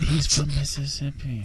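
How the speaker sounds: hushed whisper. Making an aside during a group conversation: whispering. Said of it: "You ain't gotta whisper".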